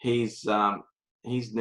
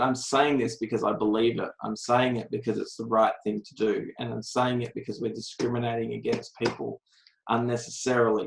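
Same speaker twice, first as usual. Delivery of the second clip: ordinary talk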